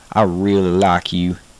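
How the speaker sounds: Southern accent with drawn-out i. Showing a learner an example phrase: Southern accent, drawn-out I. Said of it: "commonly overpronunciated in words".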